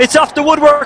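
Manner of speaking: excited goal-call shout, high and loud.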